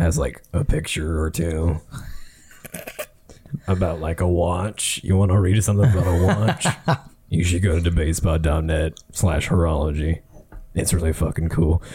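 commercial announcer style voice. Improvising a debatespot.net commercial on the spot, the speaker pitches the site: commercial announcer voice. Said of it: "a fucking debatespot.net commercial just like that".

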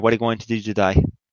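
put-on Australian accent. Imitating a guy who goes around talking in an Australian accent, mock Australian accent. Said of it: "going around with this Australian accent".

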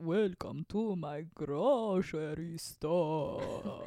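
put-on vampire voice. Recalling a game with monsters, doing the Dracula voice. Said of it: "can you do your impersonation of a vampire talking about a grocery store?".

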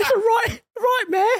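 loud, high-pitched mock ranting.

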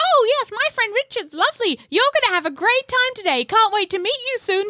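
very high-pitched, fake, comic put-on voice. Retelling a phone call where a man poses as a woman friend, putting on a high-pitched voice. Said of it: "putting on a high-pitched voice".

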